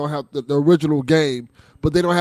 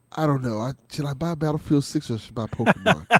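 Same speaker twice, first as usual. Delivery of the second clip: put-on hesitant, dithering voice, quieter; 4 dB quieter than usual. Retelling how a son kept asking about a game: imitating his son's hesitant asking. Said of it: "doing this thing like".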